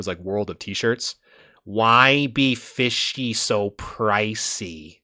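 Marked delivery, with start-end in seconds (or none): 1.6-4.8 very slow voice, every word dragged out. Speaker shows how a TikTok guy would talk, doing an impression of a TikTok guy. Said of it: "I almost sound like what's that guy uh, that's been kind of going buck wild on TikTok?".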